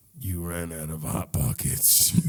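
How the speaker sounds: very low, soft, shadowy dark-figure voice. Playing a sleep paralysis demon to a pleading victim, in a dark figure voice. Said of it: "I'd be like this dark figure".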